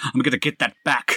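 full shout. A player's character shouts after a man who walked off with the necklace: shouting. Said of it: "I'm just going to shout".

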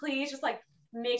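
mock, high-pitched, all-out hard begging. Retelling pleading with the chef in the kitchen, imitating begging. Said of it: "So I'm like begging".

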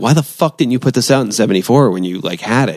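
normal talking voice

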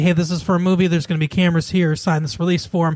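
usual speaking voice

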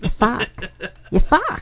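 soft put-on Boston accent laid over the words. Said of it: "I could do Boston".

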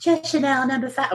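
very high, badly done sexy voice. Imitating how she answered what she slept in: terrible Marilyn Monroe impression. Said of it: "terrible Marilyn Monroe impression".

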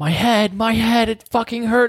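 shrill, very high-pitched pained scream. Recounting a 17-year-old who came to the station, imitating his pained screaming. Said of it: "he was like screaming like".

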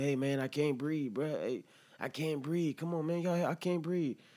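acted-out high, begging, pleading voice. Retelling what a restrained man said to officers: imitating a man pleading. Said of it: "This man is pleading".

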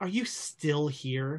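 casual, tossed-off, offhand tone. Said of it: "almost like in an offhand, just sort of way".

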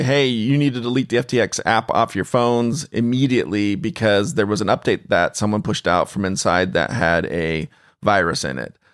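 ordinary talk, nothing marked

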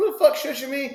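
mock angry yelling. Retelling how a woman reacted to being shushed, retelling a yell. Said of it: "Starts yelling at her".

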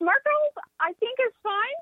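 very high pitch, voice jumping way up. Answering a question about Smart Girls while others listen, voice jumping up high. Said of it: "Up two octaves".

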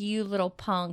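ordinary delivery

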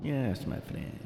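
breathy, hushed, whispered put-on Spanish accent. Speaker imitating a coworker who talks with a spanish accent. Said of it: "I have a coworker that talks like that. He has, like, a Spanish accent".

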